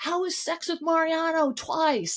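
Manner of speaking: mock shrill, very high, loud yell. Retelling a party fight between Jesse and Demi, imitating Demi yelling. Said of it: "yelling that across the room".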